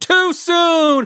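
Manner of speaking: acted screaming. Retelling how people reacted to a cancellation: imitating people screaming. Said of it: "people were screaming".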